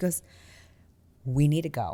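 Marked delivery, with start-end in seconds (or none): 1.2-1.9 put-on very calm, even voice. Retelling a friend saying they must leave a bar: imitating someone speaking very calmly. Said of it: "the calmest person".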